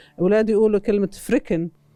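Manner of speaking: usual speaking voice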